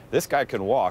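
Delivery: ordinary delivery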